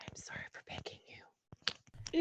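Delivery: slow, very quiet, breathy whisper. Playing Lee apologizing to a pumpkin while picking it: super quiet voice. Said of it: "super quietly as well".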